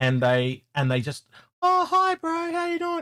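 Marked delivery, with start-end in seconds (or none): 1.6-3.0 very high, calm, easygoing, laid-back voice. Describing how some big, calm men greet you: imitating high-pitched voice. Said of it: "this almost like high pitched voice".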